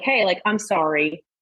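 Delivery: ordinary delivery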